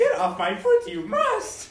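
very high, loud, swooping little creature voice. Telling a podcast co-host to get off their foot, Yoda voice. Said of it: "I am Yoda".

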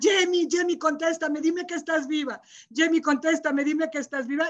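mock held-back calling out, high and half-voiced. Retelling screaming for Jamie after the car fell: retelling own screaming. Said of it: "Empecé a gritar".

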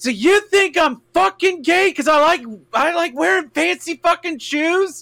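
very high, shrieking, indignant screamed rant. Retelling an argument with the father, imitating own yelling.

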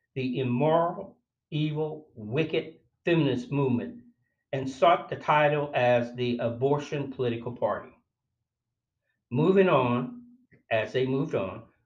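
ordinary talk

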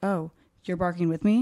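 ordinary talk, nothing marked

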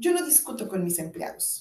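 ordinary talk

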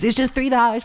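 high, whiny, mock pleading voice.

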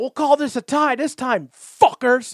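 very high, very loud, shrill yell. Retelling a man in a hot air balloon yelling at people, imitating someone yelling. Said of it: "flipping them off and yelling at them".

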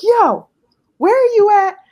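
loud, high-pitched yelling. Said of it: "like, yelling at him".

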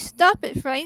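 put-on loud, high, furious shout. Retelling what a female spirit shouted when it answered: imitating an angry shout. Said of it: "she shouted".

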